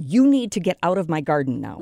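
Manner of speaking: put-on firm, stern voice. Telling how they lean out the bathroom window to shoo deer, re-enacting a stern warning. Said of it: "said sternly".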